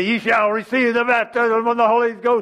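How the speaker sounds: mock pulpit-style, loud, booming preacher voice. Imitating a pastor laying hands on someone, in a loud preacher voice. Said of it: "talking to you in some loud voice".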